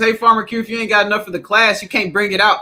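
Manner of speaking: plain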